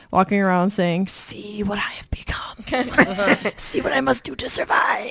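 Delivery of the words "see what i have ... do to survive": very slow, breathy whisper, every word stretched. Reading a letter, quoting a dad who quoted Voldemort: Voldemort voice. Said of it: "Insert Voldy voice".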